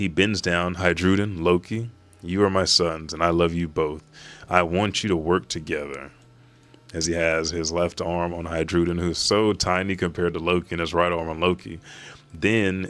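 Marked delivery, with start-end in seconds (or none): none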